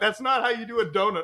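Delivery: mock heated screaming outburst, pitched high. Quoting their dad screaming at the television over a video clip, imitating dad screaming. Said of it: "my dad is literally screaming at the television".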